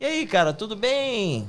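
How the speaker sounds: acted upbeat, good-natured, drawn-out, high-pitched. Showing how to greet someone with a pat on the back, in a good, positive voice. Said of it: "Com aquela voz, né, boa?".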